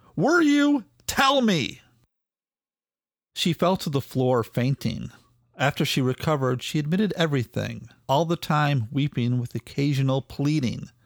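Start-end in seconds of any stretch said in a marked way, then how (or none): 0.2-1.9 slow, very high-pitched, drawn-out holler. He demands an answer from her after she stays silent; hollering. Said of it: "he hollered".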